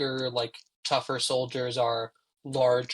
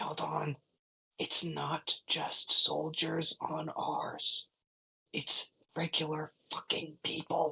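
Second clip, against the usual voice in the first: very slow, quiet, hushed whisper; 4 semitones higher, 4 dB quieter than usual. Voicing a character sending an urgent magic message: quietly whispering. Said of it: "who's currently quietly whispering".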